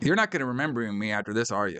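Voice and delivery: ordinary talk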